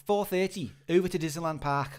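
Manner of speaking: Scouse Liverpool accent. Reading the next paragraph aloud, the speaker puts on a Liverpudlian accent. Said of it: "with a Liverpudlian accent".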